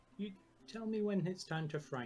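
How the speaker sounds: very quiet, hushed voice. Speaking in character as the door is approached: said quietly. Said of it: "just quietly say".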